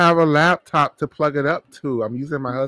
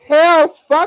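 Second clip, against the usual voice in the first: shrill, very loud, high-pitched yelling at full volume; 9 dB louder than usual. Interrupting a discussion about who would qualify, yelling. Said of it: "I'm yelling".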